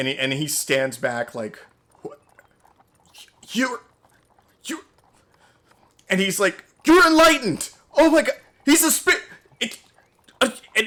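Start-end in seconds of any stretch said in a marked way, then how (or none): 2.0-9.2 stammering in shock, higher and louder. Voicing a shocked guard who stumbles over his words: shocked stuttering NPC.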